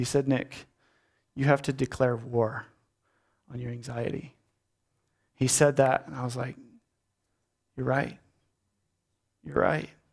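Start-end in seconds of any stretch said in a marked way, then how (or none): 0.3-4.3 mock frail, feeble, weak voice. Retelling what Reuben said just out of hospital: imitating Reuben's feeble voice. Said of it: "With his feeble voice".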